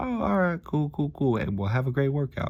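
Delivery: high, awkward, brushed-off cheerful tone.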